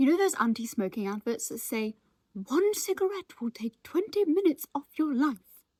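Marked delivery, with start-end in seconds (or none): 2.3-5.4 high, queenly, royal-sounding voice. Quoting an anti-smoking advert: Queen voice. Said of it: "I sounded like the Queen there".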